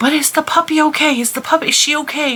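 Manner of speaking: put-on very high, anxious, worried small-child voice. Retelling what the little kids said when they came running: imitating worried little kids. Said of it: "And they're like".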